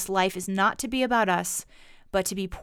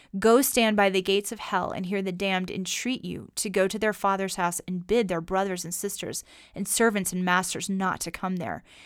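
ordinary talk, nothing marked

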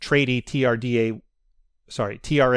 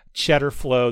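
normal talking voice

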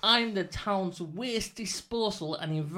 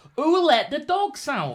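booming, high, very loud shouted call; 7 semitones higher, 9 dB louder than usual. Leading an audience call-and-response, shouting the call to the crowd: shouting the call. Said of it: "I'll shout".

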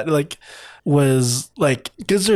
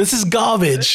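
put-on English accent, pitched up; 5 semitones higher than usual. Speaker acting out a baking-show scene as asked, in an english accent. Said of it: "But do it in an English accent like they do on the show".

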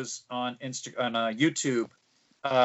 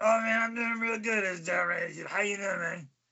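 words slurred and mumbled as if around a cigar; 6 semitones higher than usual. Speaker imitating the man everyone called Cigar answering a greeting, cigar in mouth. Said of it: "That's exactly how he sounded".

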